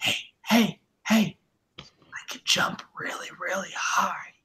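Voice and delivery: hushed, secretive whisper. Acting out someone ducking down in front of everyone, whispering. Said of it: "ducks down in front of everyone and whispers like".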